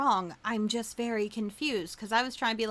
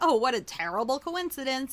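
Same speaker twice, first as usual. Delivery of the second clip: amused remark spoken through a laugh; 2 semitones higher than usual. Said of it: "I laughed about it 'cause I was like".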